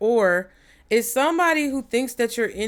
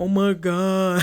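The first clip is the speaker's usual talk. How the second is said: reality-show contestant style exclaiming voice; 2 semitones lower than usual. Trying to imitate Corbin from Love Island: imitating Corbin from Love Island. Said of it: "I can't even do his voice".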